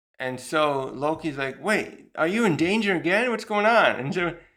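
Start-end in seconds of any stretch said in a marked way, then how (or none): 1.6-4.0 put-on excited, worked-up outburst with high raised voice. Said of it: "he's getting a little excited here".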